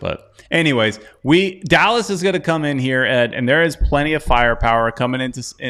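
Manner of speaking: ordinary talk, nothing marked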